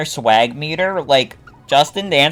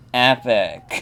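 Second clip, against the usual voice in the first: mock bored, flat, zero-enthusiasm deadpan; 4 semitones lower, 5 dB quieter than usual. Picturing Bort saying it, imitating Bort being unenthusiastic. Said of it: "in his unenthusiastic voice going".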